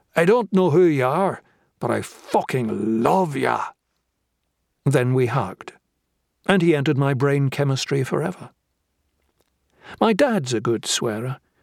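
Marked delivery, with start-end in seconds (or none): 0.1-3.6 put-on speaking in a Northern Irish accent. Narrator reads a stranger's words to him, in a northern irish accent. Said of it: "Northern Irish accent".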